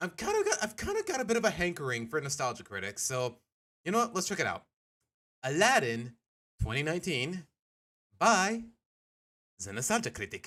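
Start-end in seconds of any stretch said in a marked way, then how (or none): 5.4-10.5 slow, drawn-out put-on French accent. Announcing what they're about to watch on stream, in a French accent. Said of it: "Why did I say that in a French accent?".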